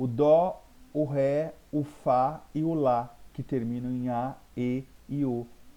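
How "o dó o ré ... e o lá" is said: dó, ré, fá, lá each stressed, loud and strong. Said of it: "com mais intensidade é eles".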